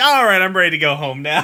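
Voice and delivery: acted, dead dry, unbothered delivery. Recalling a funny moment from the episode: imitating Steven's deadpan line. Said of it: "the deadpan".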